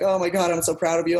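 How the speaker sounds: play-acted, choked-up, weepy crying voice. Retelling how a sister praised the trophy win: imitating someone crying. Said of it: "my sister comes up to me crying".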